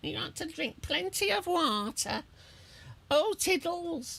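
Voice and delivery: very high, squeaky, cartoonish voice pitched way up. Showing the voice a lady on a train sounded like: Doctor Hamster from Peppa Pig voice. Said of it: "that is my Doctor Hamster from Peppa Pig".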